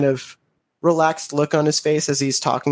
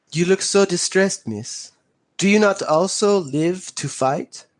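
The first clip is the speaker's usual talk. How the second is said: speaking with a put-on French accent; 3 semitones higher than usual. Playing a character who addresses a distressed woman, in a French accent. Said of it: "It's a it's a French accent".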